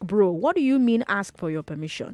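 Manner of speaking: very stern, sharp tone. Recounting her dad's reaction to her travel plans, she retells a very stern reply. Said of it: "In a very stern voice".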